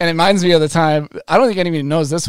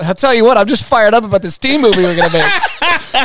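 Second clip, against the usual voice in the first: mock eager, instant excited blurt, high and loud; 6 semitones higher, 5 dB louder than usual. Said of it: "Scott goes".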